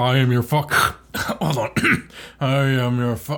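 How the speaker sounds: put-on wheezy voice. Joking about sounding like Darth Vader, the speaker answers in an asthmatic Darth Vader voice. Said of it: "Darth Vader with the asthma inhaler".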